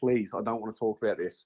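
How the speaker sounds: mock crying, tearful voice. Retelling a friend's reply after she started crying: imitating a friend crying. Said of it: "And she just started crying".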